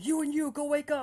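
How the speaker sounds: shrill, very high, commanding barked shout. Narrating a man rousing people from their tents, re-enacting a man shouting. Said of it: "he starts shouting".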